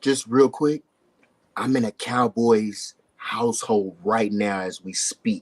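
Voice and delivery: hushed voice, speaking in a near-whisper. Speaking from a cowboys household with her diehard-fan sister nearby: half-whispering. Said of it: "why I'm kind of whispering right now".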